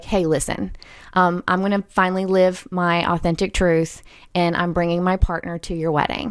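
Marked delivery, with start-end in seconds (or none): none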